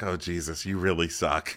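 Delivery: play-acted aghast, horrified, disgusted put-down. Retelling how Ariana reacted while listening: imitating Ariana looking horrified. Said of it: "Ariana just gives a horrified look".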